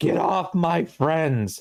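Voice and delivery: shouting in character voice. Voicing a character running to help his friends: in-character yell. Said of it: "he's gonna yell".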